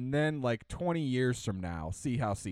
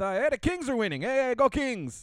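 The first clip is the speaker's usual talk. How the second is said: put-on Spanish accent, much higher pitch; 14 semitones higher, 5 dB louder than usual.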